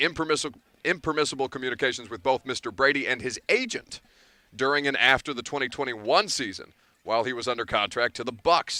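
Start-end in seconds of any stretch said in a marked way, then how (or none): none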